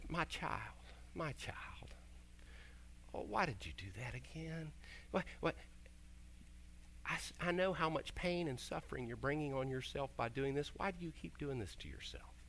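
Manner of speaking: tender, soft, gentle voice close to tears. The speaker acts out how God might answer a sinner: soft, tearful God voice. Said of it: "with a really soft voice and with a tear on his cheek".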